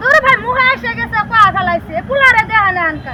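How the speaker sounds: high-pitched woman's voice.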